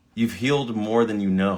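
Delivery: ordinary delivery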